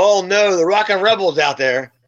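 ordinary talk

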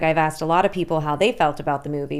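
usual speaking voice

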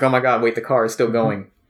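usual speaking voice

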